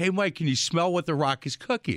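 ordinary delivery

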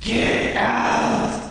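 very high, eerie, haunting ghost voice. Voicing the voice heard on entering the house: scary ghost voice. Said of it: "I always hear this voice".

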